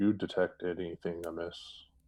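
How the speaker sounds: murmuring very low. Dropping back beside a companion in a cave, murmuring very low. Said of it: "murmur as low as my voice can go".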